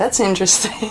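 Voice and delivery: ordinary delivery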